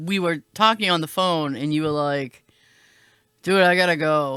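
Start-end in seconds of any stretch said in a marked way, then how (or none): 3.4-4.4 put-on defeated, resigned-sounding tone. Retelling a phone call with the other speaker: imitating someone sounding defeated. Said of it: "you sounded very, like, defeated".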